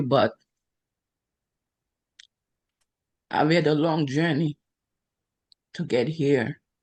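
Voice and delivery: voice straining, fighting to hold back tears. Speaker thanking God after passing an exam, holding back tears. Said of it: "I'm trying not to cry in here".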